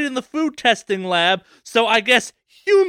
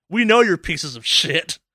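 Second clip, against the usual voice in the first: put-on commercial announcer voice, lower; 6 semitones lower than usual. Imagining the company boss speaking in an ad: Taco Bell CEO in an ad. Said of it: "C E O to be in their ad being like".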